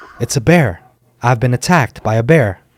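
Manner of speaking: ordinary delivery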